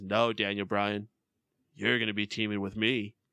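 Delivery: slightly camp villain voice. Retelling what happened, the speaker does a camp Bray Wyatt impression. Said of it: "You kind of just sounded a bit camp".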